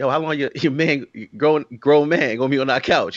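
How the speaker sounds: plain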